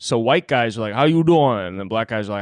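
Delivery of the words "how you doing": put-on, pitched-up Cajun accent. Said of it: "they all just have Cajun".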